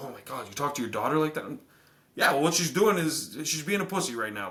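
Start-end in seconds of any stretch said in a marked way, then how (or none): 0.0-1.4 put-on shocked outrage. Imitating shocked people reacting to harsh words: imitating shocked people. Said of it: "people might be like".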